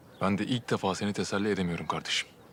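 ordinary talk, nothing marked

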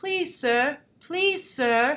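put-on emotionless, mechanical robot voice with British accent. Praising a movie, the speaker quotes its robot pleading: automated British robot voice. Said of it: "he has that automated British voice".

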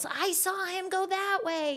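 very high-pitched, shrill yell. Retelling how a lady in the car behind shouted: retelling a lady's yell. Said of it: "some lady in the car behind me yells".

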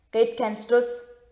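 ordinary delivery

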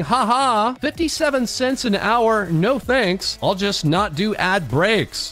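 ordinary delivery

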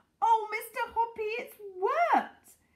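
loud, very high outcry. A narrator reads a woman calling to a man over the railings, crying out. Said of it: "she was crying".

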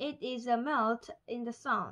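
plain reading voice

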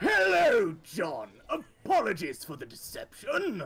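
poshest put-on voice, swooping and high. Asked to do the poshest voice they can, the speaker uses the poshest voice possible. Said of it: "the poshest voice you can do".

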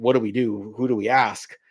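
ordinary delivery

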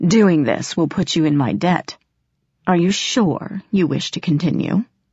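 ordinary talk

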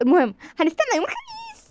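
eager, excited, high and sing-song animated lilt. In a scripted scene, a character's remark makes another ask why she's excited; excited. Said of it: "انت متحمسه ليه؟".

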